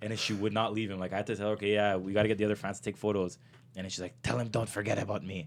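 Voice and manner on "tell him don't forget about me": put-on goblin-like pirate voice. Retelling what a fan said at a photo session, in a pirate voice. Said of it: "She's a fucking pirate".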